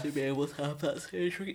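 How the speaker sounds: speaking through a yawn. Chatting with another speaker, apologizing mid-conversation, yawning. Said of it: "Sorry, I'm yawning".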